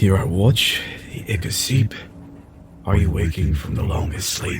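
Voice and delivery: whispered, in a character voice. Player narrates Ezra touching the heart in the engine room: Ezra whispering. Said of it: "and whispers to the heart".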